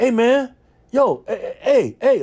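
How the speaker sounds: very high, very slow, halting stutter. Retelling how a man in a car called out: imitating a man stuttering. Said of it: "like that, 'cause he kinda stuttered".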